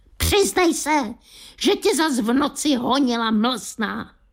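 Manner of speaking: furious, squeaky cartoon-mouse voice. A cartoon mouse on television points its paw at the viewer, angry squeak. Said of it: "vztekle zapištěl".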